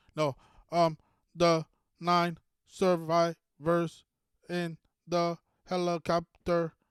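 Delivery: mock stammering. Mocking an official reading a script about a crash: imitating someone stuttering. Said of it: "Why the fuck are you stuttering?".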